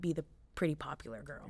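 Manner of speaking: normal talking voice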